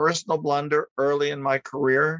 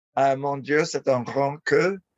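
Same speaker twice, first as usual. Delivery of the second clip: usual speaking voice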